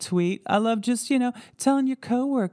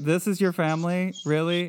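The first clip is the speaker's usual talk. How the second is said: ordinary talk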